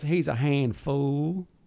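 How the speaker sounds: imitated Mississippi kid's drawl. Retelling a shoot, the speaker quotes a kid from Mississippi in a Forrest Gump accent. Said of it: "he sounds like Forrest Gump".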